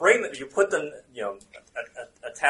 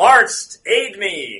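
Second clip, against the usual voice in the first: high-pitched, loud shout; 6 semitones higher, 11 dB louder than usual. The narrator voices a king crying out as he leaps: yelling out. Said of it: "He yells out".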